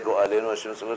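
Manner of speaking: plain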